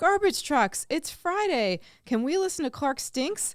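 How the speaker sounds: put-on high, loud, excited child voice. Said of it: "excitedly said".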